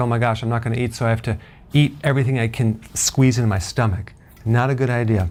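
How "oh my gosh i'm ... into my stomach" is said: ordinary talk, nothing marked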